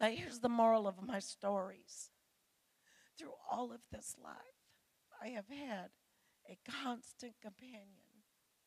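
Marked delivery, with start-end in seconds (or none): 3.2-8.2 tearful, breaking voice, speaking through tears. A speaker addressing an audience after talking of caring for her mother, crying while speaking. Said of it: "I'm sorry, I'm crying now".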